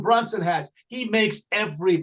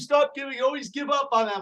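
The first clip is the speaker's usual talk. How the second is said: yelling, higher pitch; 6 semitones higher than usual. Retelling what someone in the background shouted about the team: imitating Carmen yelling. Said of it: "yelling at me".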